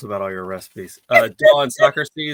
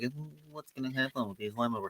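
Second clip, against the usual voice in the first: hushed, very quiet, doubtful, unsure wondering murmur; 16 dB quieter than usual. Teasing the listener by mimicking their earlier delivery back to them, mock-unsure tone. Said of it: "It was more like".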